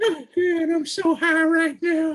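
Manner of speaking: very high, loud, cartoonish voice. Chatting with a co-speaker, the speaker mimics a South Park character, Towelie voice. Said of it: "talks like Towley from South Park".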